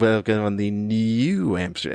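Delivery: showy, affected, fancified pronunciation. Explaining how New Amsterdam is spelled, then saying it with put-on fancy pronunciation. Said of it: "that sounds annoying by me doing that".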